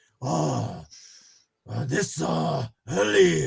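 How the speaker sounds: halting, very slow put-on Korean accent. Retelling calling other teachers' hotel rooms early morning: Korean-accented voice. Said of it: "like in a Korean voice".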